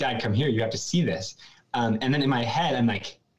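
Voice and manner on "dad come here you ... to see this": plain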